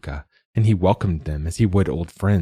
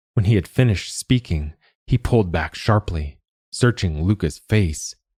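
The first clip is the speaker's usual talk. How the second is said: ordinary delivery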